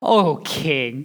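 acted-out sarcastic, contemptuous tone. Retelling the three men's answer to the king: acting out sarcasm and contempt. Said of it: "delivered with utter sarcasm and contempt".

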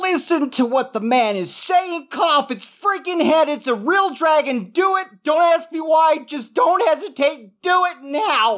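yelling, pitched very high. Player character dragging Evan up the stairs, urging him on, yelling. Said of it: "as I'm yelling".

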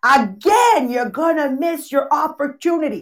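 Italian-flavoured voice. Storyteller quotes a woman urging her toward a man, imitating Carmela's loud Italian voice. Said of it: "with her beautiful Italian loud voice".

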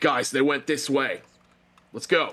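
commanding shout. A player's character shouts in to deceive pursuers, in his most authoritative voice. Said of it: "in the most authoritative voice I can muster".

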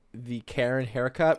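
plain

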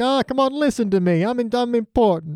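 high entitled tone. Describing Theon's early days as captain: imitating Theon. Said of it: "this is him before he's murdered anybody and is just like".

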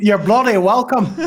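put-on fake Irish brogue. Replying to thanks before the movie talk, in a put-on Irish accent. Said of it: "the worse the accent gets".

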